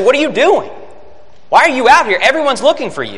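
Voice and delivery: reproachful, accusatory. Showing how the seekers' words on finding him should be read, with an accusatory tone. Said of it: "with an accusatory tone".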